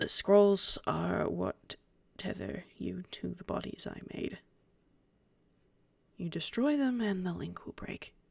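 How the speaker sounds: very soft, hushed delivery. A game narrator voicing a man who lays scrolls on a desk, speaking very softly. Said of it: "And he says very softly".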